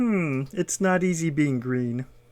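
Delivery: put-on frog puppet voice. Showing off impressions to a listener, speak in a Kermit the Frog voice. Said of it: "Kermit the Frog".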